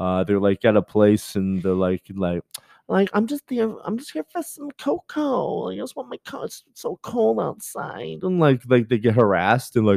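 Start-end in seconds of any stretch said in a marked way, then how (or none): 3.1-8.2 very high, rough, creaky put-on drag queen voice. Imitating drag queens who ask for cocoa: imitating a drag queen. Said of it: "drag queens or".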